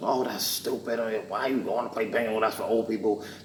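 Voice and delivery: high-pitched mock yelling. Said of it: "I'm not gonna yell at you".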